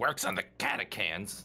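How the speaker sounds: hushed mumble, muttered under the breath. Voicing a character tucking away his garlic: muttering under his breath. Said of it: "mutters under his breath".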